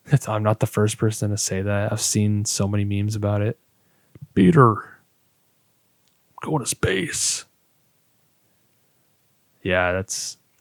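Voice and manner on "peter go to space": very slow, high, creaky, rasping cartoon cop voice. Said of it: "Buzz looks like Joe from Family Guy".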